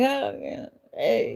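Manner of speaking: play-acted cheesy, over-cordial whisper, soft and breathy. Speaker acts out how she greets people she dislikes, retelling a cheesy smiling greeting. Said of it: "I'm very like cheesy, cheesy, you know, smiling".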